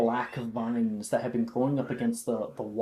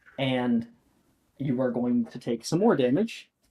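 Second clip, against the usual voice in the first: ordinary talk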